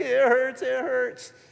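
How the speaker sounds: put-on slow, high, tearful, sobbing child's whimpering cry. Retelling how a two-year-old with blisters cried: imitating a sobbing child. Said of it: "sobbing, shaking, like".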